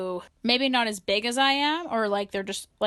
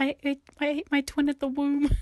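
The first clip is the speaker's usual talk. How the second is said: mock muffled mumbling voice, pitched higher; 6 semitones higher than usual. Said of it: "this weird muffle noises".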